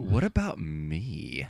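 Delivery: put-on angry, snappy Valley Girl voice, soft sing-song. Retelling what she said when upset, the speaker does a Mean Girls Valley Girl voice. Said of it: "Like that sort of voice".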